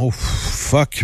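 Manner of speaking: ordinary talk, nothing marked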